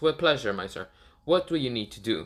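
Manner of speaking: put-on ai voice. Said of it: "Jarvis talks".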